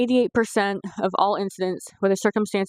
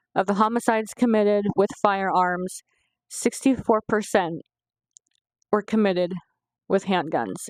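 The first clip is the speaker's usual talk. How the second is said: welling-up, tearful, teary reading-aloud voice. Reading a report aloud to viewers, tearing up as you read. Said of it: "I am tearing up as I read this".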